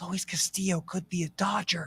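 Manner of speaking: soft, hushed, low-key conspiratorial tone. Saying it so the Dodgers executives won't hear, in a soft quiet voice. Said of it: "I'm going to say this in a soft tone of voice".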